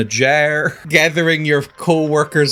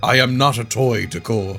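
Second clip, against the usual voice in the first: angry dragon voice, lower; 4 semitones lower, 3 dB quieter than usual. Voicing the dragon who will be angry at being touched: angry dragon voice. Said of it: "He's gonna be so angry at me".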